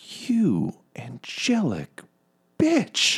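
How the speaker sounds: nasty, horrible, very high-pitched voice. Voicing a woman whose fingers were just hacked off, in a horrible quiet voice. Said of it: "in her like horrible quiet voice".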